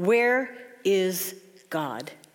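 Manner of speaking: severe, stern, demanding tone. Telling a story, the speaker voices the clergyman questioning the boy, stern. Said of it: "asked him sternly".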